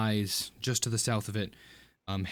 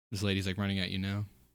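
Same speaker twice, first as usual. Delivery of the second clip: ordinary talk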